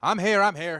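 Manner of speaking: very loud calling voice. Voicing a halfling advisor arriving late: raised voice. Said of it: "you hear a raised voice".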